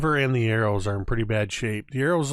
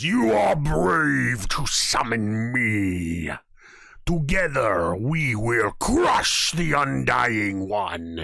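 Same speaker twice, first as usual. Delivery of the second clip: slow, deliberate god voice with me drawn out. Game master voicing a summoned figure speaking to Talil: booming voice. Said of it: "in a booming voice says".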